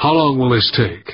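plain reading voice

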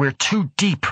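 yelling. As another man gasps that he can't breathe, Karlstad yells out. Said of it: "Karlstad yelled".

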